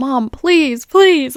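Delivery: put-on high, pleading little-kid voice. Retelling a three-year-old's words: imitating a child pleading. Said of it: "a three-year-old pleading with you".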